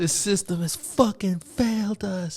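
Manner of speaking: put-on high, sobbing, screaming outburst. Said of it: "and she's, like, screaming".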